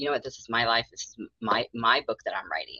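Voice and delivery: plain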